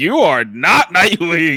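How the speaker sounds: loud comic-book villain voice. Retelling a video where a villain greets nightwing: imitating a nightwing villain. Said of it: "He's like".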